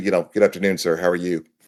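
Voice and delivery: strictly serious, stern tone. Showing the switch from a goofy self to work mode, in strict seriousness. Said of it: "strict seriousness".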